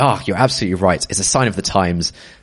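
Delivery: normal talking voice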